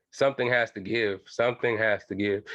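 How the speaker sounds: plain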